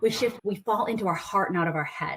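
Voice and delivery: ordinary talk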